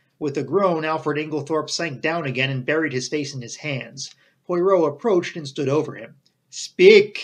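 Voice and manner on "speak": very loud, threatening, menacing shout. Narrator reading a man standing over another who refuses to answer, menacing cry. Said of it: "he cried menacingly".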